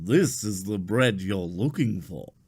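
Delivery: persuasive, mind-trick suggestion voice. Showing Obi-Wan how the line should be said: Obi-Wan Jedi mind trick voice. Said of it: "You have to say it like this".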